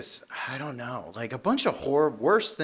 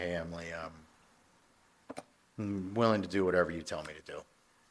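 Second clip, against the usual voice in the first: dead flat monotone, lifeless, one note, no inflection; 7 semitones lower, 6 dB quieter than usual. Speaker retells what they once said to Emily, in a monotone voice. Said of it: "in the most monotone voice you could think of".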